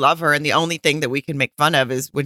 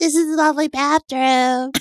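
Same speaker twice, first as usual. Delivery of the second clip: put-on very high baby voice; 11 semitones higher than usual. Mimicking a woman's words while she showed her home, in a baby voice. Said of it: "baby voice".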